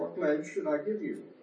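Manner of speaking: ordinary talk, nothing marked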